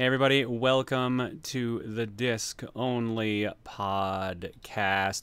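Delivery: very slow, deliberate, drawn-out delivery. Opening the podcast while waiting for things to start: talking slowly. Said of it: "I'm talking slow".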